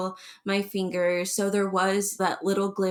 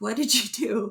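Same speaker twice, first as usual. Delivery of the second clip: angry, furious, confronting tone; 3 semitones higher than usual. Retelling a husband confronting the surgeon: imitating an angry husband. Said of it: "And he was angry".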